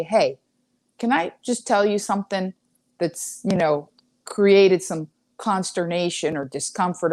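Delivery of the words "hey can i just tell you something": ordinary delivery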